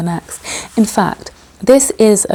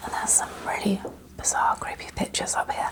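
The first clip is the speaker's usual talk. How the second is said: soft, breathy, very hushed whisper. Touring a suite's living area: whispering. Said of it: "I don't know why I'm whispering".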